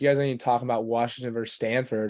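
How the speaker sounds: plain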